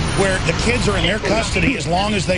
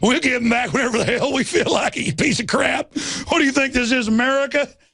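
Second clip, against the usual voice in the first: put-on East Texas accent with pitched-up voice; 5 semitones higher than usual. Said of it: "I can do this accent perfectly".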